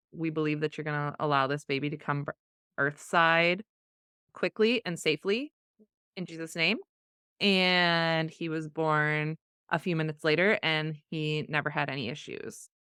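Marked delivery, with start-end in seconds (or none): none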